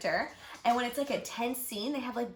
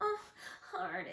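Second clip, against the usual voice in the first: put-on pathetic girly voice, very high, soft, creaky; 10 semitones higher, 7 dB quieter than usual. Tell Katie how pathetic a man's girl imitation is, imitating his pathetic Tessa girl voice. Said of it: "The way he talks like a girl is so pathetic".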